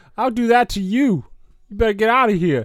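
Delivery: clumsy put-on Boston accent. Acting out a man's lines in a put-on Boston accent. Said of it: "That's a Boston accent".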